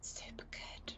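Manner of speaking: hushed whisper. Answering a question about a dinner on a date: whispering. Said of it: "Don't know why I'm whispering".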